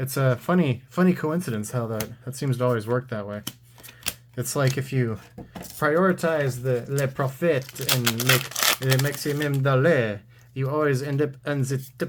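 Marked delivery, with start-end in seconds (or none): 5.8-12.1 deliberately bad, atrocious fake French accent. Mid-monologue, a speaker slips into a deliberately bad French accent. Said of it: "That was my French accent".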